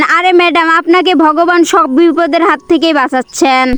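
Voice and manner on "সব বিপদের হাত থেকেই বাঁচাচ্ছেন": ordinary delivery, nothing marked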